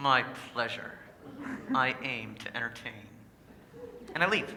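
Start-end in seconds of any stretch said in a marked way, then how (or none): 0.0-2.9 gritted-teeth sarcasm, lower and quieter. Retelling his reply in the hallway after a girl thanks him, sarcasm through gritted teeth. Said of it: "as sarcastically as I can muster through gritted teeth".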